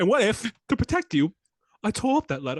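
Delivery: big, high theatrical voice. Doing a Michael Caine impression as Alfred for the others: Michael Caine impression. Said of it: "It started as Michael Caine".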